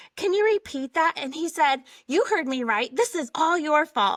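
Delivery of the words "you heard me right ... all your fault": put-on yell, louder and higher. Recounting a man's reply after she asked him to repeat himself: retelling a man yelling. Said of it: "He's yelling at me".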